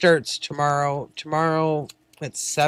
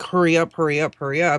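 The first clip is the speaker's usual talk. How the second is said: ordinary talk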